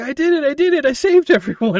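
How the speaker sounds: put-on gleeful kid voice, high, loud and giddy.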